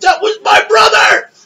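mock scream as a high yelp, kept contained. Retelling how a wrestler kept screaming during the match: imitating someone screaming. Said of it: "the entire time was just screaming".

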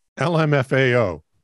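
ordinary talk

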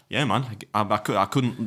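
normal talking voice

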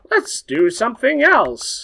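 silly, very high-pitched voice. Speaker explains why watching hockey at home fails, in their ADD voice. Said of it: "That's my ADD voice".

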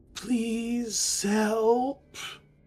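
very high, distant echoing voice, help drawn out. Narrating a story, a transparent figure holds out a hand: distant, echoing voice. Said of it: "you hear a very distant, echoing voice say".

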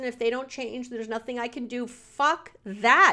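angry shouted outburst, loud and furious. Venting alone in the office about someone dodging responsibility, yelling. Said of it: "I'm yelling in my office".

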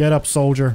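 poor fake American accent. The speaker tells a soldier to get up, in a terrible American accent. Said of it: "doing like a terrible American accent".

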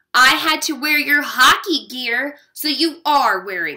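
firm, insisting. In the dressing room, answering Richie's complaint about his costume, insisting. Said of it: "I insisted".

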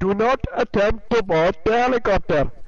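loud, high, booming game announcer voice.

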